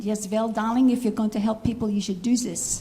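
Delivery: put-on very thick German accent. Retelling what the speaker's mother said when asked for advice: imitating mother's German accent. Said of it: "she said in her very German accent".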